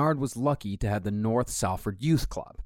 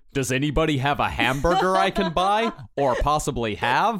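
mock American accent, higher and louder; 4 semitones higher, 5 dB louder than usual. Mocking how british actors sound in american roles: british person doing an american accent. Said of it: "an American accent, it's like".

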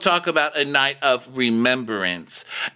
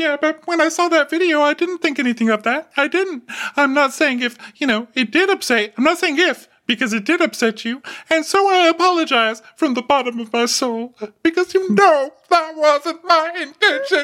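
very high, choked-up, tearful crying voice; 14 semitones higher than usual. Retelling an apology made while crying: imitating Heavenly's crying voice. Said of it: "She starts making her little crying sounds".

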